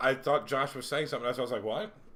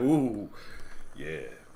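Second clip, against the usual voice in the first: giddy, all-excited gush of delight; 4 semitones lower than usual. Imitating a coworker who gets a curly straw: imitating someone excitedly. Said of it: "He's like".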